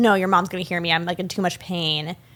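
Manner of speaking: usual speaking voice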